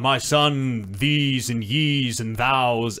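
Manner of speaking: put-on very slow, very proper, stately old-fashioned kingly voice. Retelling how the game's king talks: imitating a very proper king. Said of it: "is very proper".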